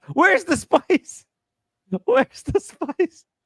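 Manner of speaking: play-acted, very high, demanding yell. Retelling someone yelling at the chef: imitating someone yelling. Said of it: "yelling at the chef".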